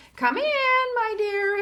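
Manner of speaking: very high, sweet, slow grandmother voice. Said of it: "said the wolf in a high voice".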